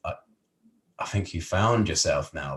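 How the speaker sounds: ordinary talk, nothing marked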